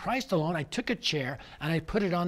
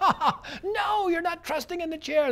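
mock laughing shout, higher; 12 semitones higher than usual. Retelling an audience's answer to a question: imitating a crowd screaming. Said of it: "They're all screaming out".

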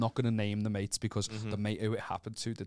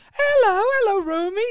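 put-on very high, very loud, drunk and obnoxious voice; 11 dB louder than usual. Telling how drunk friends greeted and lifted a dog: imitating drunk friends' greeting. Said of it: "Don't ever do that voice again".

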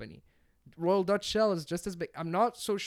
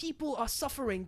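put-on child voice, pitched higher; 7 semitones higher, 4 dB quieter than usual. Mocking a kid activist's speech to the crowd: Greta Thunberg impression. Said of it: "great impression".

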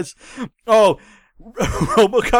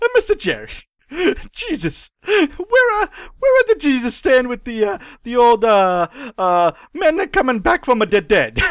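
put-on Italian voice, much higher pitched; 3 semitones higher than usual. Performer delivering a promised bit, in an 80s Italian Pope voice. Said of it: "80s Italian Pope is coming".

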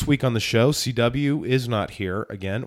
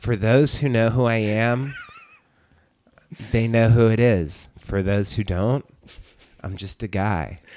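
put-on sing-song voice, pitch swinging widely. Repeating the self-introduction while imitating Kip. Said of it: "That's my Kip".

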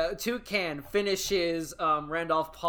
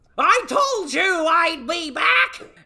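very high, very loud bird screech; 12 semitones higher, 9 dB louder than usual. Narrating a game, a cassowary points a wing at Vina, squawking bird voice. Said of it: "and squawks".

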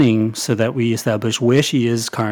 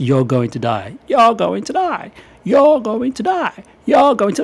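very high, swooping, creepy shout; 10 semitones higher than usual. Describing a game voice prompt, retelling a shout. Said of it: "he basically shouts".

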